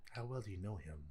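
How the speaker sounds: soft half-whisper, close to the ear. Before going in, the speaker half-whispers a question aside to Syndra's; half-whispering. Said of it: "I'm gonna whisper to Syndra's".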